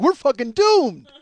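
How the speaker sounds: put-on loud, panic-stricken outburst of despair. Retelling the moment he told a friend they were caught: imitating own panicked self. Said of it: "I'm panicking".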